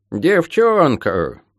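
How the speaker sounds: dismissive, scornful, contemptuous snort. The elder one answers Molly's questions, with a dismissive snort. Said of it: "пренебрежительно фыркнула старшая".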